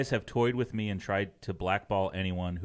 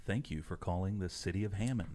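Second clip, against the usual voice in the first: smooth radio announcer voice, quieter; 6 dB quieter than usual. Showing the others the City Hall phone message: smooth radio announcer voice. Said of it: "Let me give you something here".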